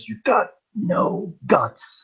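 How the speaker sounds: very slow, drawn-out whisper. Retelling a scene where one man stabs another, retelling a whisper. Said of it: "he just whispers".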